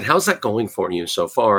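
ordinary talk

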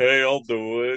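put-on Liverpool accent. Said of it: "I like your impression".

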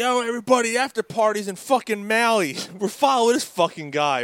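put-on high-pitched yell, calling out loudly. Retelling what he yelled to everybody while following a guy, retelling a yell. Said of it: "I'm yelling shit".

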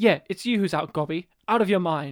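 snide, passive-aggressive sass. Imagining an English voice-over reader dubbing villain lines: mock passive-aggressive sassiness. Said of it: "like a passive-aggressive sassiness".

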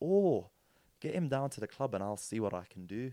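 put-on speaking with a Scottish accent. Retelling the reply after his brother recommended him to the club: Scottish accent. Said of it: "in his Scottish accent".

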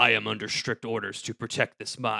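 soothing deep voice. Describing a game boss's added dialogue, the speaker does the Armored Armadillo voice. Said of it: "the voice that they gave Armored Armadillo was very like".

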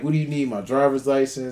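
normal talking voice

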